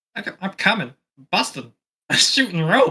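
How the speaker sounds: cartoon alien creature voice, swooping, swinging pitch. Working quietly while a man stares at him, suddenly speaking in a Stitch voice. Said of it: "he you just hear me go in a Stitch voice".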